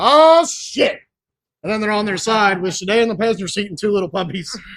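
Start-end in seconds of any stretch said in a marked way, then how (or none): 0.0-1.0 high, loud, startled shocked outburst. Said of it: "all you hear is [name] go".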